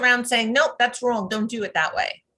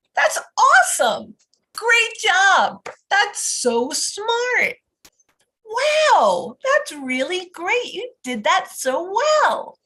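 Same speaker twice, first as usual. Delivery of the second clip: high, swooping, enthusiastic, with wow drawn out; 8 semitones higher, 3 dB louder than usual. Demonstrating the reinforcing tone used when praising, with enthusiastic praise. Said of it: "I want to be more enthusiastic".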